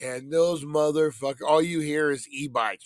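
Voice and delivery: ordinary delivery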